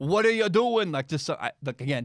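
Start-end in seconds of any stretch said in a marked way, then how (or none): 0.0-0.9 clumsy put-on New York accent, pitched up. Imagining fans watching a bad throw: bad New York accent. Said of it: "I can't do a New York accent".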